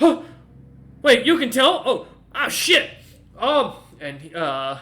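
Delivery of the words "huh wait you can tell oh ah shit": startled yelp, very loud and high, caught off guard. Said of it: "as he kinda looks at you and goes".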